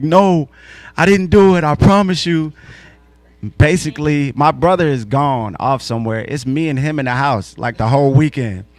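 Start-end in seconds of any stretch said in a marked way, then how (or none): 0.0-2.5 higher, louder pleading. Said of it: "he's pleading".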